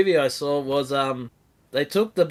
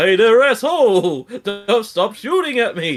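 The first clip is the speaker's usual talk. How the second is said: goofy, loud, swooping cartoon bear holler; 7 semitones higher, 6 dB louder than usual. Explaining to a confused listener, repeating the line in the Yogi Bear voice. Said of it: "I was just doing the Yogi Bear voice".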